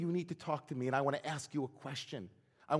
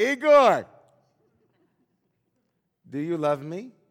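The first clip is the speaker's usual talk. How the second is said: put-on very loud, slurring drunken drawl yelled; 13 dB louder than usual. Telling a joke where a drunk man yells to his friend, imitating a slurred drunken drawl. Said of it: "in a slurred, drunken drawl".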